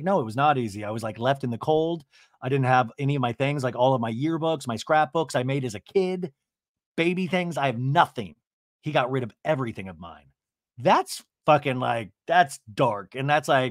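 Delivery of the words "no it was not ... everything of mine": ordinary talk, nothing marked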